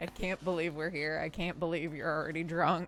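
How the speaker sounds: put-on muttering under the breath. Describing a scene, retelling the father muttering under his breath: imitating someone muttering under his breath. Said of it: "muttering under his breath".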